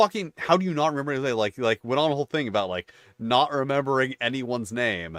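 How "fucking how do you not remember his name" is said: mock, really pissed-off, pitched-up rant. Retelling the DM scolding players for forgetting names: imitating a pissed-off rant. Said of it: "he got really pissed off".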